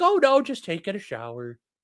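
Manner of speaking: breezy dog voice. Telling how the dog stood in the rain, voicing the dog Clyde. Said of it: "And he's just like".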